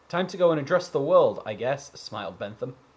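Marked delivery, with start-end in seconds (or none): none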